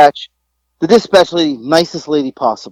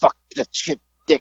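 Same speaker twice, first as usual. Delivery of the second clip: put-on angry mutter under breath, quieter; 7 dB quieter than usual. Retelling cursing while walking out the door: retelling muttering under breath. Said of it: "under my breath".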